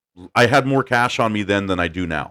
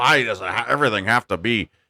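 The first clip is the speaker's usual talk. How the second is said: impersonated ranting voice; 2 semitones higher than usual. Retelling how dad ranted about oversized clothes: impersonating dad ranting. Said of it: "impersonation of my dad when he's ranting".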